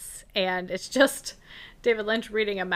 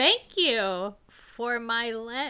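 put-on spooky, eerie childlike voice; 2 semitones higher than usual. Retelling what the thing sitting on him said at the end, spooky kid-sounding voice. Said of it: "in like a kind of spooky kid-sounding voice".

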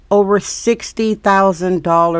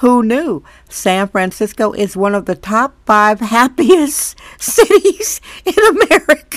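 speaking through stifled, held-back laughter; 3 semitones higher, 4 dB louder than usual. Show host reading a claim seen on social media, holding back laughter. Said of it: "Can I say this without laughing?".

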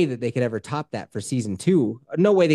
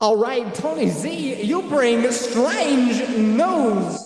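very high-pitched, very slow, drawn-out character voice; 10 semitones higher than usual. Redoing an introduction of a guest on request: Christopher Walken voice. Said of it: "but do Christopher Walken".

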